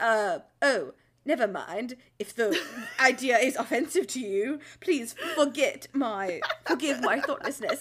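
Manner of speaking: bad put-on British accent. Imitating what he says instead of explaining, in a bad British accent. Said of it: "He becomes British".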